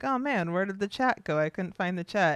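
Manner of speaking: ordinary delivery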